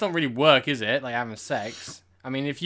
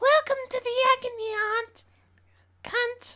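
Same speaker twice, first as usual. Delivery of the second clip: fake old woman voice, higher pitch. Trying to sound like an old lady while welcoming listeners: put-on old lady voice. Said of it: "Does that sound like an old lady?".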